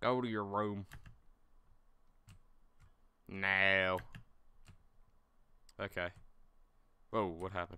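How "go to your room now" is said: put-on Southern drunk voice. Voicing a drunk father ordering his son to his room, stereotypical southern drunk voice. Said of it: "That's the voice I'm going to give him".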